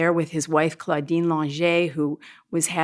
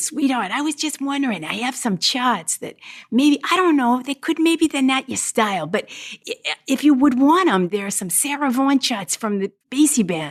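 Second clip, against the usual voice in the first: put-on man's Brooklyn accent, pitched up; 7 semitones higher than usual. Retelling how a man offered you sarah vaughan's arrangements, imitating a man's brooklyn accent. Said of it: "he had this Brooklyn accent".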